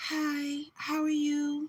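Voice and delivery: put-on very high, girly, super-feminine voice. Describing how the speaker's mom spoke, imitating mom's super feminine voice. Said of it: "my mom spoke like this. Like super feminine".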